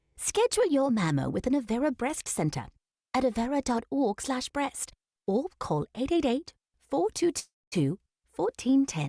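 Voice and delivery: radio ad delivery in a put-on British accent. Radio ad offering different ways to ask for mammograms, this one in a British accent. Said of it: "Or with a British accent".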